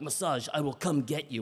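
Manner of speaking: put-on menacing, threatening delivery. Retelling a spa worker's reply about the massage, mock-threatening. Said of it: "he said it like a threat".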